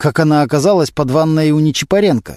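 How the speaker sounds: plain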